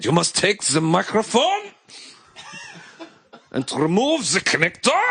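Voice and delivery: very high, scary, swooping put-on German accent. Joking about someone's phone calls with service reps, in a put-on German accent. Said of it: "everything sounds terrifying in German".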